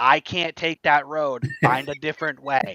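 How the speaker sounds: loud, exasperated, frustrated yell. Retelling a drive on a detour route: imitating yelling at the dashboard. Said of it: "I'm yelling at my dashboard going".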